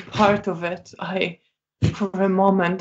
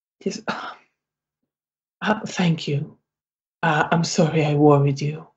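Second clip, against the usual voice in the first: tense, deeply upset, barely controlled voice; 3 semitones lower than usual. Voicing a shaking, tense character thanking a friend: very distressed. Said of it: "clearly very distressed".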